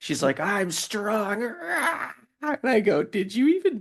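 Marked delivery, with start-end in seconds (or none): 0.4-1.4 mock little-girl voice, screaming and boastful. The speaker retells what a girl screams when she tries to flip him, retelling a girl's scream. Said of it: "when she's screaming it".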